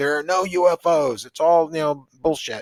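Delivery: put-on angry scolding, yelling. Retelling how mom yelled at them late at night: imitating mom yelling. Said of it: "just yelling at me and saying".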